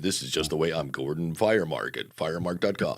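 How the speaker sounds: deep voice pushed way down low. Imitating a podcaster's low voice: Gordon Firemark voice. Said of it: "Gordon has that Gordon voice".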